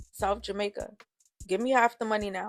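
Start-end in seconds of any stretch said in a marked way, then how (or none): 1.5-2.5 stern tone, louder. Reading a story aloud, voice the cab driver speaking to his passengers in a stern tone. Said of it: "the driver says in a stern tone".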